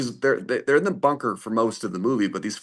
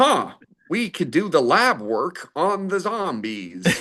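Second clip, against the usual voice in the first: slow, pitched-up put-on American accent; 6 semitones higher than usual. Mimicking a British man doing an American accent in a zombie movie. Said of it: "he sure is doing an American accent right there".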